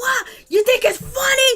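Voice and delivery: high, shrill-pitched mock scream.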